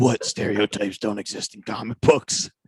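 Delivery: breathy, whispered comic-book masked vigilante voice.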